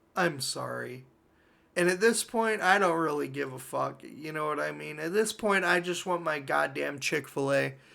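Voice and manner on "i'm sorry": put-on mutter, lower and much quieter. Retelling how a man looked at him and apologized, retelling a mutter. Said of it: "he just kind of like mutters like".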